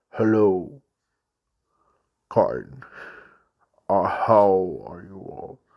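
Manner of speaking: very deep, dark, low voice. Retelling a voice recording someone played to shocked parents, deep dark voice. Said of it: "he shared it as it was deep dark voice like".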